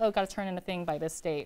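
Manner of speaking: usual speaking voice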